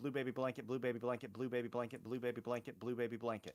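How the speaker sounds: rapid-fire, very fast tongue-twister delivery. Giving in to a request to say a tongue twister five times, said fast. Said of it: "say it five times fast".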